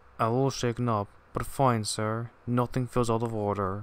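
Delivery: ordinary delivery, nothing marked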